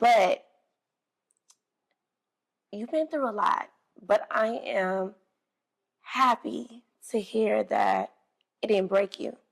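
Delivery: holding back tears. Responding to the story Angel has just shared with them, holding back tears. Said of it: "I'm trying not to get teary eyed".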